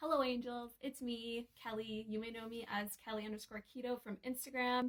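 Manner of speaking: ordinary delivery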